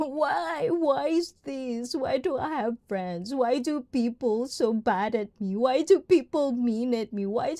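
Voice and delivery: slow, miserable, whiny, whining complaining. Imitating people who complain about their miserable life: imitating someone complaining. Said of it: "complaining about life".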